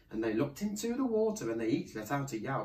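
plain reading voice

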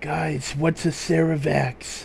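under the breath. A narrator voices Rookie's aside to the group, under his breath. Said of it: "You hear Rookie say under his breath".

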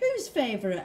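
suspicious, doubtful, wary tone. The narrator answers Mum, asking suspiciously. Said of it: "I asked suspiciously".

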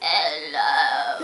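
hoarse, croaky, quacking duck-like voice. Imitating someone who sounds like a duck, croaky duck-like 'hello'. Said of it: "he sounds like a duck, because he's all croaky like".

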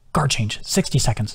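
plain

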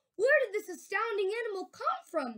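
high, astonished, amazed cry. Reading a story aloud, one character asks another: cried out. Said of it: "cried Miss Severs".

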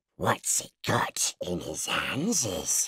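slow, creeping creature voice, "hands" drawn out. Narrating a story, reading Gollum's line to Bilbo Baggins, in a Gollum voice. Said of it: "Whispered [name], who always spoke to himself through never having anyone else to speak to. ... Whispered [name]".

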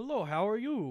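put-on heavy Russian accent. Retelling meeting a woman who looked nothing like her picture, thick Russian accent. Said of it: "she has like a thick Russian accent".

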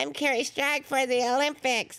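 extremely high, dog-whistle pitch, as high as possible. Imitating a gymnast talking about herself: imitating Kerri Strug's high-pitched voice. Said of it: "she has, like, the highest pitched voice".

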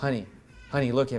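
mock composed, very quiet, soft-spoken, level, stoic voice. Retelling how his wife calmed him down: imitating a stoic reply. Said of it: "she just turned to me real stoic".

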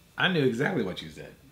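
normal talking voice

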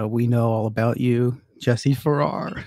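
put-on unhinged, crazed psycho voice. Retelling a voicemail from a caller who phoned in, in a psycho voice. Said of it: "real psycho voice".

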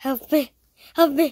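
loud, high-pitched desperate cry.

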